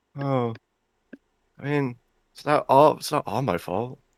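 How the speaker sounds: softly weeping. Playing a character in a role-play scene, answering an accuser, quiet crying. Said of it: "I start like quiet crying".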